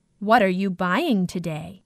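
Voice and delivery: ordinary talk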